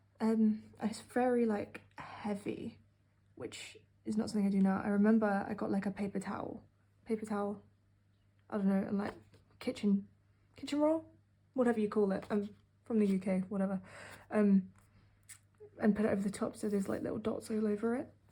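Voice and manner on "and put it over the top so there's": words rattled off very fast. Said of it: "I'm talking really fast".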